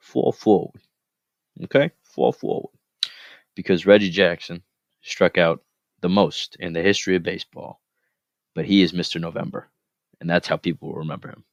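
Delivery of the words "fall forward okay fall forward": put-on New York Brooklyn accent. Speaker closes the talk with a parting phrase, in a Brooklyn accent. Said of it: "I'll leave you with that Brooklyn accent".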